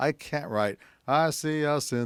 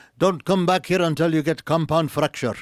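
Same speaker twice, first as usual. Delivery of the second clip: accent from the Middle East; 6 semitones higher, 7 dB louder than usual. Voice actor giving an example of his past voices, Middle Eastern doctor accent. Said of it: "I did a Middle Eastern doctor".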